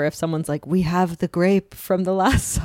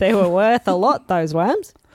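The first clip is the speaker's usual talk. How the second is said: put-on Australian accent throughout; 3 dB louder than usual. Talking about a tour person in australia, the speaker puts on an australian accent. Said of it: "That's a good accent".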